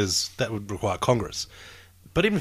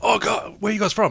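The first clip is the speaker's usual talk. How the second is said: high, excited bar owner voice. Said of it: "He's like".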